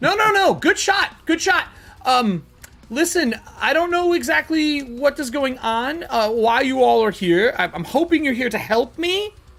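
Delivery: high-pitched yell called down from far above. A woman calls down to the group from forty-odd feet up, character yelling from far up. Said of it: "She's yelling from like forty something foot up".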